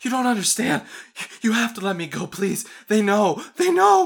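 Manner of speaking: very high, very loud, shrill, terrified, hyperventilating panic. A game master voices a woman, terrified and hyperventilating. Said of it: "She's hyperventilating now, though. She's like, looking terrified".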